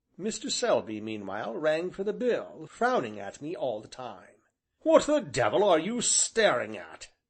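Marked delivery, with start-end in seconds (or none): 4.8-7.1 loud, hectoring, bullying tone. Narrator reads a frowning man's sudden demand to the narrator: loud bullying tone. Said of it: "in a loud, bullying tone".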